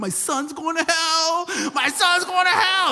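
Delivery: mock sobbing, wailing cry, very high-pitched. Retelling the mother's reaction on finding the plastic thing on his arm, imitating her crying. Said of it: "she drops to her knees and she's crying".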